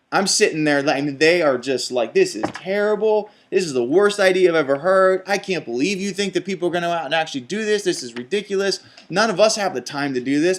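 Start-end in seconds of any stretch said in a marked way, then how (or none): 2.1-10.6 fed-up, angry, indignant ranting. Retelling how furious people reacted to the speaker's idea, imitating angry people. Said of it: "they were so mad".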